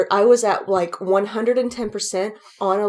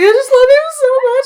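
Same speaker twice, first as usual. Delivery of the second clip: very high, very loud sobbing, tearful gush; 9 dB louder than usual. Retelling how a coworker started crying over a celebrity: imitating someone crying. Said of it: "started crying".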